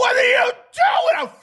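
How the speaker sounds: play-acted, very high, frantic, freaked-out, panicked yell. Retelling when the driver jumped out of the spinning cart: retold freaking out. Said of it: "I'm freaking out".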